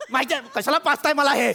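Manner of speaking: worked-up, agitated, irritated and angry voice. Complaining that the co-host knows nothing of hosting: agitated, angry. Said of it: "शांत व्हा तुम्ही".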